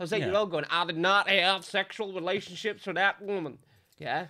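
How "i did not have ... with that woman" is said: put-on American accent. Recalling childhood impressions, the speaker does Bill Clinton impression, American accent. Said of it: "I used to do impressions of Bill Clinton".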